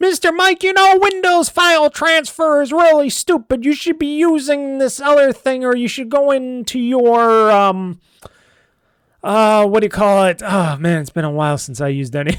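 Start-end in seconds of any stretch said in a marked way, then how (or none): 0.0-7.5 mock yelling, higher. Imitating people out there screaming a correction: imitating someone yelling. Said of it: "people out there screaming at me going".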